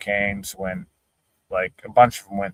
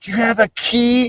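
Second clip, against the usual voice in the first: yelling, pitched way up. Retelling how a locked-out friend yelled at a lady: imitating someone yelling. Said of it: "He's yelling".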